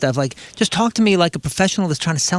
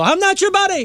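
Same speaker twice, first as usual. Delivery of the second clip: very high-pitched, dad-style yelling. Recounting shutting the door on a man, retelling own yell like a dad. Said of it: "and then I yelled at him like a dad".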